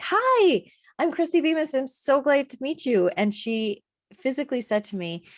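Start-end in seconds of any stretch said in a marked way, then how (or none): 0.0-3.1 bubbly, high, super-excited, full-energy voice. Retelling greeting a woman on a consultation call, mock super-excited greeting. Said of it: "I was coming in like super excited".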